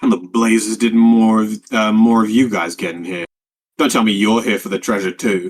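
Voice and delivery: gruff, low-pitched put-on character voice. Narrator voicing an unseen figure calling out to the listeners, low gruff voice. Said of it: "it's kind of uh, low and gruff".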